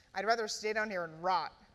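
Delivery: ordinary delivery, nothing marked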